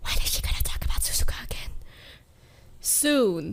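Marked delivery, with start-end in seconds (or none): 0.0-1.7 whispered aside. Speaker voices what the viewers might be thinking, whispering.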